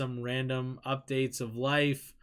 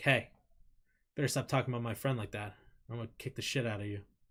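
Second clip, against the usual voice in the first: as serious as humanly possible, dead-serious voice; 3 dB quieter than usual. Showing how to answer someone being down on themselves, in a very serious voice. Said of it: "say it in as most serious voice as you can".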